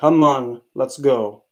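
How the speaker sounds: very slow, firm commanding tone. Showing the switch from a calm voice to a firm one: firm voice. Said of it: "From just being nice, calm, cool, collected, to firm".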